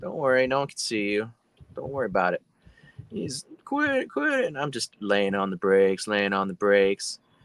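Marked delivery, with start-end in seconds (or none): 3.6-4.4 put-on, shrill, very high, loud shouting. Retelling how he yelled as the speaker kept tapping the brakes: retelling a yell. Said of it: "he's over there yelling".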